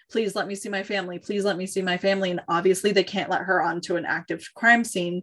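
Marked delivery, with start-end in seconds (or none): 0.2-2.3 mock-pleading, begging voice. Retelling a woman's pleas to police at a taped-off crime scene, begging. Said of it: "She just keeps begging".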